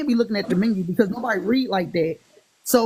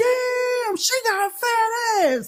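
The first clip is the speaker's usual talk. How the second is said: acted loud exclamation, raised pitch; 13 semitones higher than usual. Retelling what a date said at a restaurant table: imitating a loud exclamation. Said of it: "he loud as hell in this restaurant".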